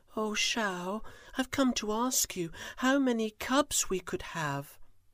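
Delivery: soft, gentle, humble, a little high. Narrator reading Tiger bowing to ask Shao a question, soft and humble. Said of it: "she spoke softly and humbly".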